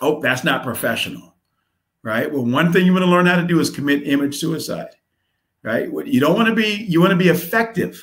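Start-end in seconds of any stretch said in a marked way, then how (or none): none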